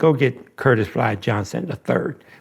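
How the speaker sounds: mock, heavily sarcastic tone. Retelling the judge's order to fetch a friend, imitating a sarcastic remark. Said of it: "But he said it real s-, sarcastically".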